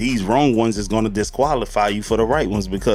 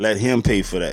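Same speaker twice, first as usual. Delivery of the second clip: ordinary talk, nothing marked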